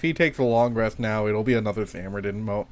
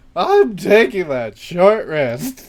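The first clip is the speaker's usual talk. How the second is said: loud, high-pitched cracking voice; 8 semitones higher, 12 dB louder than usual. A player imagining how another party member would say a line, mock voice crack as Mumford. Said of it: "just full voice crack".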